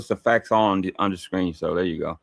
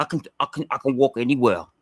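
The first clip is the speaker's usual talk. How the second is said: imitated, mock New York accent; 2 semitones higher than usual. Mocking a friend's boast of walking anywhere: imitating a New York accent. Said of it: "That New York accent just kicked in".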